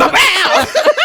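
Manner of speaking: mock loud blast.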